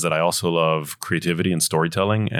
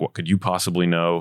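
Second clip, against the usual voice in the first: mock-condescending, put-on tone. Recalling raising concerns in the doctor's office, mimicking the doctors' condescending tone. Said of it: "they get this condescending tone".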